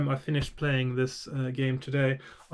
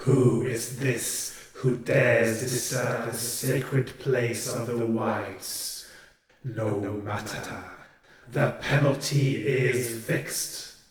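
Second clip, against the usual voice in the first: hollow, empty, disembodied-sounding voice; 3 semitones lower than usual. A voice from all around challenges whoever disturbs the sacred place, hollow voice. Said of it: "a hollow voice sounds from all around you".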